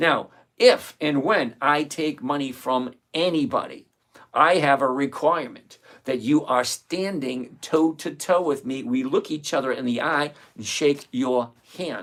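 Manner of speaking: slow, deliberate, carefully enunciated, each word spelled out. Speaker tells listeners they will speak slowly so they understand: slow and enunciated. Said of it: "I will enunciate and go slower".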